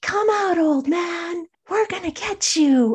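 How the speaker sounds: put-on high, taunting, rowdy kids hollering together. Speaker retells a crowd of kids at his house yelling at his dad, retelling kids yelling. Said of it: "they were yelling like".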